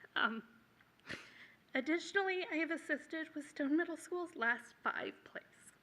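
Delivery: choking up, on the verge of tears. Listing her school work, the speaker apologizes and goes on, choking up, near tears. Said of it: "I'm sorry, I'm gonna cry".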